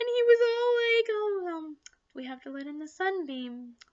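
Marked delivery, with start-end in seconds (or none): 1.1-3.7 put-on soft, hushed, scared voice. Recounting a scene, the speaker acts out his line, imitating a scared, soft voice. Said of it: "a tone in his voice that he was scared, and he sounded like soft, like childlike".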